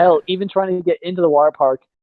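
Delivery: ordinary delivery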